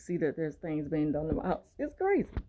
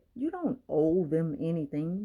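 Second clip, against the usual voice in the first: ordinary talk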